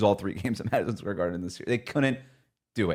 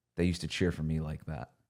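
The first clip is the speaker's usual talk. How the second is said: low half-whisper, under the breath; 5 semitones lower, 6 dB quieter than usual. Retelling what a man half-whispered as fans cheered the Cubs, half-whispering under his breath. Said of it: "I just hear him whisper under his breath".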